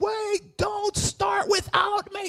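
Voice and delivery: very high, long, drawn-out shriek. Retelling a late arrival at a baptism: imitating Evan Weaver screaming. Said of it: "he screams".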